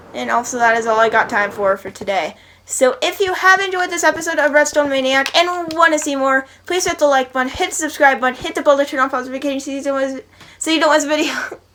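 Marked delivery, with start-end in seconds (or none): 6.6-11.3 very fast, rapid-fire, rushed. A YouTuber wrapping up an episode of his series, very fast. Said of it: "when I say it super fast".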